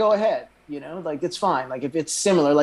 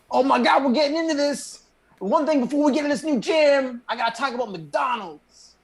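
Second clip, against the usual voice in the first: very high-pitched, hyped-up radio hype-man voice; 10 semitones higher than usual. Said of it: "pretty good [name] impression".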